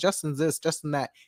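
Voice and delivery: ordinary talk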